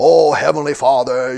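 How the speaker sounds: showy, put-on, pious prayer voice. Describing pretenders changing their voice to look religious, put-on religious voice. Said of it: "changed the whole manner of their voice and speaking".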